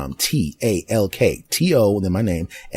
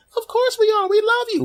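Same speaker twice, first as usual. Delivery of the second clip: very high little put-on voice, set back from mic. Answering own question as the audience, high voice away from microphone. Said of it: "saying a high voice slightly further away from the microphone".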